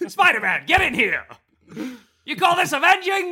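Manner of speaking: high-pitched, bellowing, bossy yelling. Pitching a movie scene where Spider-Man gets chewed out, as J. Jonah Jameson yelling. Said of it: "gets chewed out by J".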